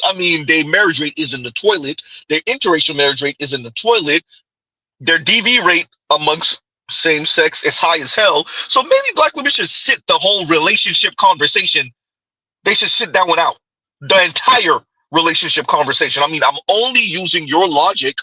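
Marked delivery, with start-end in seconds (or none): none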